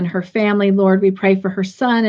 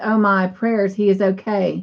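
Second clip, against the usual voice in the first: normal talking voice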